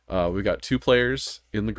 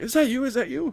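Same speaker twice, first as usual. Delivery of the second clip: high, anxious, uncertain tone. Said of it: "Josh was like".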